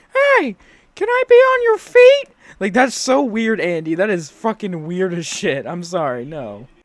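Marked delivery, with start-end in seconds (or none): 0.1-2.3 very high, very loud, squeaky puppet voice. Mocking a man playing with a shoe like a puppet, mock puppet voice. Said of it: "acting like a puppet and saying like".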